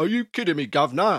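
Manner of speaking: put-on London Cockney accent. Host reacting to a tarot reading request in a put-on cockney accent. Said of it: "I'm going to drop the Cockney thing immediately".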